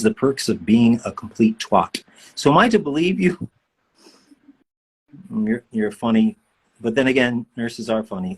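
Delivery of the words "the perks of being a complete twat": ordinary talk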